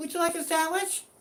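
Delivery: put-on very high-pitched, girlish voice. Telling listeners about a show, quoting its character: high Sandwich Cutie Cat voice. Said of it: "In a really high voice".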